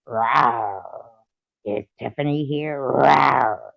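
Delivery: each "rawr" stretched out slowly. Showing how a tiger talks: tiger voice, Tony the Tiger-like. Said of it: "Tiger talks like a tiger".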